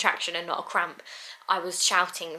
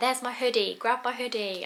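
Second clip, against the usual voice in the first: urgent, high-pitched call-out shout; 5 semitones higher than usual. Retelling being in labour at home, shouting at him: retelling own shout. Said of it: "I'm shouting at him".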